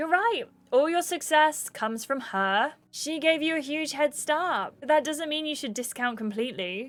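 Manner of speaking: mocking, sarcastic tone. Picking a dialogue option they feel bad about, delivering it sarcastic. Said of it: "I'm gonna say it sarcastically though".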